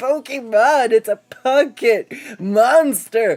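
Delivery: put-on high, loud, slow, anguished child scream.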